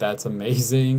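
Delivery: ordinary delivery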